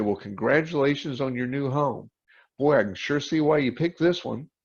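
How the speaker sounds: plain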